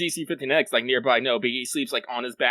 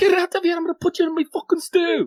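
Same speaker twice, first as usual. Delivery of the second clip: very high, furious, put-on Irish-accented yelling; 5 dB louder than usual. Playing an Irish character chasing a parrot frog off the roof, angry put-on Irish shouting. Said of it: "we're Irish. How do we do this?".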